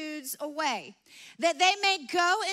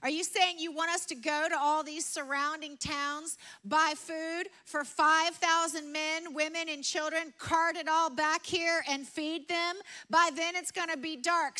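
ordinary talk

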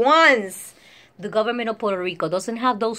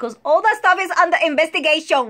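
put-on Puerto Rican accent, pitched up; 6 semitones higher than usual. Telling an audience why there are things you cannot talk about, in a Puerto Rican accent. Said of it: "I said under investigation with a Puerto Rican accent".

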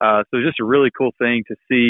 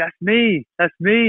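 put-on thrilled little kid, high and excited; 8 semitones higher than usual. Retelling a three-year-old seeing herself in a book: imitating an excited child. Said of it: "And she got so excited".

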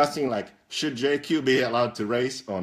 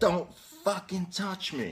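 high, mock, furious shouted yell, up close; 6 semitones higher, 6 dB quieter than usual. Retelling yelling at a guy who had pushed: imitating own yell. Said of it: "And I yelled".

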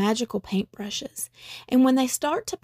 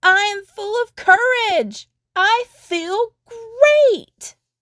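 very high, loud, joyful cheering yell, "great" stretched; 9 semitones higher, 7 dB louder than usual. Narrating a story as Mulad dances around the fire and shouts, shouting. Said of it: "Mulad dances around the fire and shouts".

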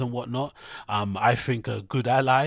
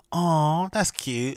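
condescending, teasing, mocking, pitched-up "aw"; 5 semitones higher than usual. Retelling what a clubgoer said to him: imitating a mocking tone. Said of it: "in, like, a mocking way".

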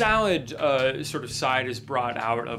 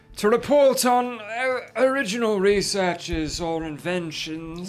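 put-on elderly man voice, much higher pitch; 7 semitones higher, 4 dB louder than usual. A game master voices an elderly man character: elderly man voice. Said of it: "you see an elderly man in military finery".

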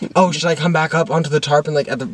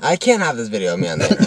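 normal talking voice

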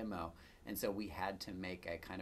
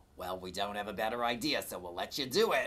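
very loud put-on New York accent; 2 semitones higher, 8 dB louder than usual. Retelling what an unnamed person told the team, in a new york accent. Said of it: "in the New York accent".

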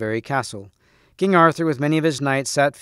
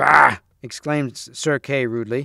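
ordinary delivery, nothing marked

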